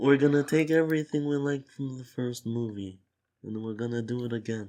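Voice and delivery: put-on creepy, menacing mob boss accent. Laying out a movie sequel plan, in a creepy Marlon Brando Godfather accent. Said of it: "That's the creepiest accent".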